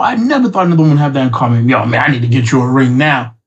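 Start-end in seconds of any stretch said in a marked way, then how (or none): 1.7-3.3 put-on sarcastic tone, slower. Retelling a chat with a woman, the speaker quotes her own mock-sarcastic reply. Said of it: "All sarcasm".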